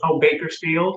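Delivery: put-on southern drawl. Retelling the young server's answer about where she's from, in a southern drawl. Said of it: "She's got this this little southern drawl".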